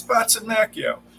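put-on howling laughter. Retelling how someone named the guys: imitating someone howling with laughter. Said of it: "he starts howling with laughter".

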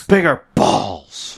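forceful bossy voice, hit hard with conviction. Showing how to say a phrase in a voice, like they mean it: Vince McMahon impression. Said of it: "That's Vince McMahon".

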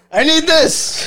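high voice calling out across a distance. Retelling someone calling from across the apartment: imitating someone calling out. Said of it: "you're just all like".

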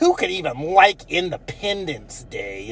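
mocking, pretentious girl voice. Describing a pretentious film girl on the show: imitating a pretentious film girl. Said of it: "like a girl who's like".

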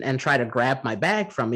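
ordinary delivery

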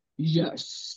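mimicked deep, echoing voice. Retelling how he answered and his voice shook you; imitating his deep voice. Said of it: "I'm going to try to like say it how he said it".

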